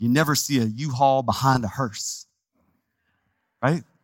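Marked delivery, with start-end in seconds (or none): 0.0-2.2 spoken in a Texas accent. Quoting a saying about death the way it must be said: Texas accent. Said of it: "with a Texas accent".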